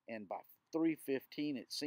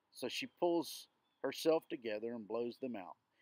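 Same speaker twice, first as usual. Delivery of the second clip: plain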